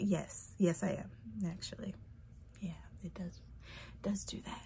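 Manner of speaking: breathy whispered voice.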